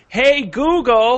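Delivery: high, loud, slow, drawn-out shout.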